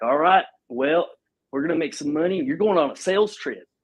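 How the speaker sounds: loose drawl. Retelling what a man told him in the Northwest; put-on drawl. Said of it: "kind of had a drawl".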